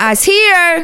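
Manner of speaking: put-on loud, very high, shrill child's shout. Retelling a little girl announcing herself while trick-or-treating, imitating Peace yelling. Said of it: "She yells".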